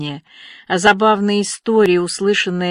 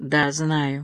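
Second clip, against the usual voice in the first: quiet, noticeably quieter, soft voice; 4 semitones lower, 6 dB quieter than usual. Anya answers Ruby's question, quietly. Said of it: "тихо ответила Аня".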